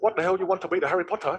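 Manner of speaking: put-on Vietnamese-accented English. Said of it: "I put on my dad's accent".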